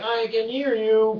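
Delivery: slow, machine-like computer voice. Retelling a dream where Stephen Hawking answers: Stephen Hawking computer voice. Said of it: "with his computer".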